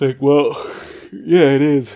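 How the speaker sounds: speaking through a yawn. Answering what people say about marriage, while yawning. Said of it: "Sorry for yawning".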